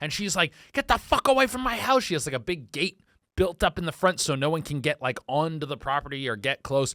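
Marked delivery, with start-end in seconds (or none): 0.7-2.0 mock shrill, very high, furious angry shout. Retelling how the house owner talks to visitors: imitating a furious angry lady. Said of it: "the most angry".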